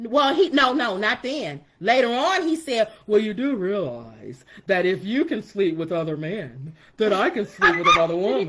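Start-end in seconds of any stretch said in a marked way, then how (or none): 3.0-8.5 low, dim-witted, dumb-sounding guy voice. Retelling what her husband said later on, in a go-to voice for stupid. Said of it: "that's my go-to voice for stupid".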